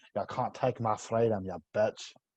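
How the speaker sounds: line in a put-on Scottish accent. Showing how the tricky Scottish accent goes: Scottish accent. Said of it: "The Scottish one's tricky. You got to say".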